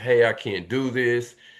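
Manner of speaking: put-on crying voice. Acting out an imagined person on Earth who gives up: imitating someone crying. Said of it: "crying, saying".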